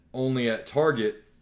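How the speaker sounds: ordinary talk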